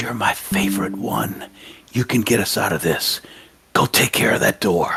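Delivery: whispered, encouraging words. Whispering encouragement to an ally during a fight: whisper. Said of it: "I'm gonna whisper to Ashrina".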